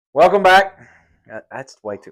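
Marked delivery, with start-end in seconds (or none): 0.1-0.7 very loud, high, booming announcer-style voice. Opening the recording with a greeting to viewers: loud. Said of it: "why am I always so loud?".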